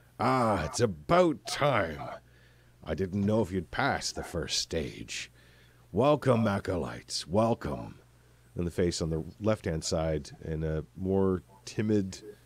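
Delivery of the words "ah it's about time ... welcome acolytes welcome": rough, gruff, snickering dwarf voice. Narrator voicing the dwarf face on the right greeting the acolytes: gruff, deep dwarf voice. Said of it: "the gruff and deep voice of a dwarf".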